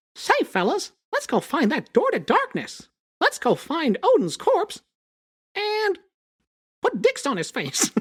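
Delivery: high-pitched and stretched out. Offering it to the others, the speaker does a Mickey Mouse impression. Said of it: "I will do my Mickey Mouse impression".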